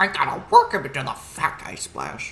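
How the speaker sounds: loud, belted put-on voice with big pitch swoops. Joking over a wrestling game match: Paul Heyman voice. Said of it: "Paul Heyman voice".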